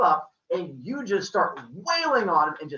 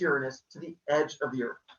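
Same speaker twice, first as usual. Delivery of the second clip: normal talking voice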